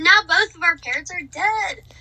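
bright, cheerful delivery.

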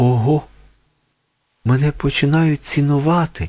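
joyful, high-pitched, glad cry of delight. A young man finds a sapphire on wilted violets, joyful exclamation. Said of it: "радісно вигукнув він".

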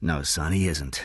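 ordinary delivery

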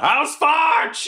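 very high-pitched shouted battle cry. Raising a hammer and charging into the woods: yelling a battle cry. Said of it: "I raise my hammer and I just yell".

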